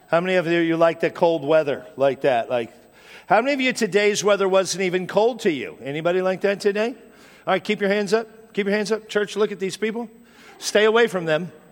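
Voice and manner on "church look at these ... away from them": joking, teasing tone with mock seriousness. Addressing the church about those who liked the cold, teasing the congregation. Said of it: "I'm teasing".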